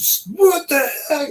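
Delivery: acted, very high, drawn-out hollering shriek. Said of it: "I was just screaming and hollering".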